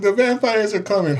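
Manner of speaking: acted, very high, squealing child's shriek. Retelling how others jumped off a swing: imitating someone screaming. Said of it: "they're screaming".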